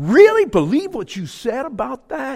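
very high disgusted voice. Retelling a conversation, quoting a woman's question to the speaker: mimicking a disgusted tone. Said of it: "with disgust".

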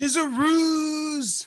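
shrill, high, loud, far-carrying shout. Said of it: "you hear Nicandros shouting".

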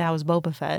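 ordinary talk

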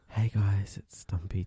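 put-on slow, drawn-out ASMR intro voice. Showing how they pretend to be an asmr video maker: mock asmr video voice. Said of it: "I pretend I'm, like, one of those people that do A S M R videos".

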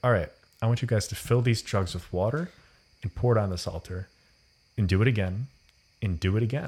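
ordinary delivery

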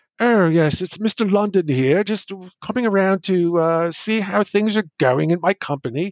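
put-on British accent. Retelling how someone toured the desks in character, in a Mr. London British accent. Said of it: "he'd walk around talking in a British accent".

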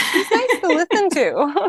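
put-on high, light girl's voice. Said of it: "She's like".

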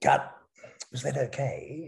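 put-on gentle English accent. Imitating a Shakespearean actor after a take: soft English accent. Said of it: "Really soft sort of English accent".

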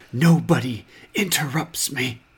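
hushed voice. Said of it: "she's, like, whispering".

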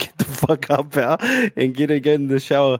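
ordinary talk, nothing marked

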